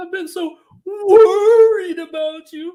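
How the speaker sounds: shrill, slow, goofy cartoon voice, big squeal. Quoting a favorite cartoon bit where he dresses as the rabbit's mother, Pete Puma voice. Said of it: "I knew how to do that voice".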